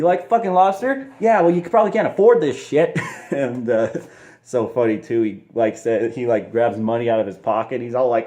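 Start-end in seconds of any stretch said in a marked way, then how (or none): 0.0-3.0 angry, mocking, rattled-off rant, higher pitch. Retelling a scene where Belfort grabs a lobster, mock-angry Belfort impression. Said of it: "Belfort gets all mad".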